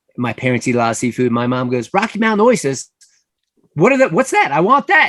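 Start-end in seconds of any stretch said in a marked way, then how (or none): 2.0-5.1 put-on loud, heavy, thick New York accent. Acting out your mom reading a menu aloud, in a loud thick new york accent. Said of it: "so loud with this thick New York accent".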